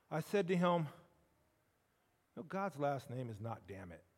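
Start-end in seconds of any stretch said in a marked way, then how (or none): 2.3-4.0 play-acted steady, even-toned, low and quiet. Retelling what he said to a man he walked up to: even voice. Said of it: "just in an even voice".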